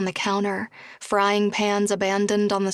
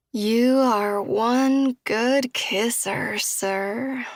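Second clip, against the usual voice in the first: put-on sloppy, tipsy, slurred Texas drawl, very slow; 2 semitones higher than usual. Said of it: "slurs Cam in that delicious Texas accent".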